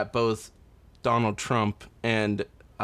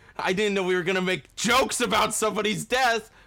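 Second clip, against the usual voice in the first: mock, high-pitched, pissy whine. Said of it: "you could tell the guy was kinda pissy".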